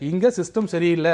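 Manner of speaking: plain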